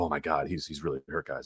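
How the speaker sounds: grave, very low, hushed, commentator-style murmur. Describing wrestling commentators after a wrestler goes through a table, mock-somber commentator voice. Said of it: "the somber voices of".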